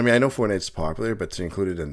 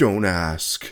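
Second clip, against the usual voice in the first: put-on serious tone. Retelling Jackie's reply about being away: imitating Jackie's serious tone. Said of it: "Had this serious "don't ask" tone".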